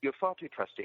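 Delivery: nonchalant, offhand, light and unbothered. Retelling a film villain's line after destroying a planet: nonchalant Peter Cushing impression. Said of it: "he just very nonchalantly says".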